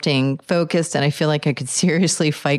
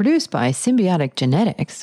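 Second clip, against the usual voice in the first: put-on product-ad announcer read; 3 semitones higher than usual. Reading a description of Wedding Crasher in a put-on announcer voice. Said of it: "let me do my best announcer voice".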